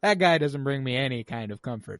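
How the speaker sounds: ordinary delivery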